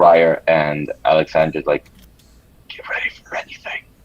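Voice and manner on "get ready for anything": hushed, quiet whisper. Warning two other characters to be ready: whispering in character. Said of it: "I move back and I whisper to both".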